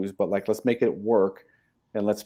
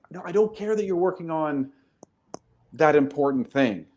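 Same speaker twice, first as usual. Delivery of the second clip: acted yell, higher pitched; 7 semitones higher than usual. Acting out a manager yelling across the office at an employee: imitating a manager yelling. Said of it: "he's yelling across the whole room".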